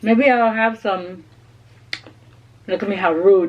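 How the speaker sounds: speaking with mouth full while chewing food. Eating cauliflower chicken while talking, speaking with a mouth full. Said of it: "with my mouth full".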